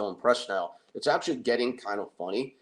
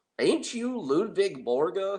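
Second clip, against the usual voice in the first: put-on terrible but earnest Southern accent, slow drawl; 8 semitones higher than usual. Retelling a woman coming up to Tony in the South: bad Southern accent. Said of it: "I do terrible accents, but I'm doing my best".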